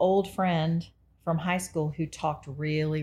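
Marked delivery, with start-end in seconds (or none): none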